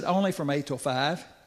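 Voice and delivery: ordinary talk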